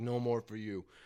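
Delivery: grouchy, grumpy, fed-up tone. Retelling what a man told the speaker after a second mishap: imitating a grumpy man. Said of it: "he's all grumpy now and shit".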